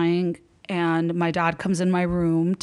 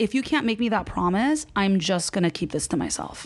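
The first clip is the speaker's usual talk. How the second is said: normal talking voice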